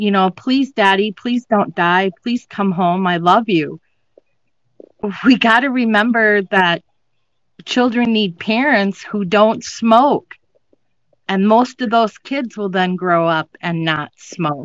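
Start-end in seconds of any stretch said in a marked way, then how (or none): 0.3-3.8 put-on crying little girl voice, tearful pleading. Telling of a granddaughter begging as her father was airlifted, imitating a little girl crying. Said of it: "here's this little girl crying".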